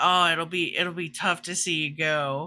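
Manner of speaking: mock, sarcastic, falsely sincere tone. Retelling a scene where Raelle wishes someone well: imitating Raelle's sarcastic comment. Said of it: "Raelle's got this beautifully sarcastic comment".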